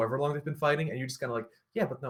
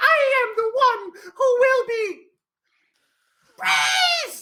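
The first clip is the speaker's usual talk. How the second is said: cackling, gloating villain voice, very high and loud; 10 dB louder than usual. Acting out a character's words in the story, cackling to himself. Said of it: "it's sort of like cackling to himself".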